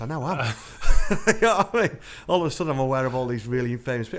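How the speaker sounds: laughing out loud, loud and high.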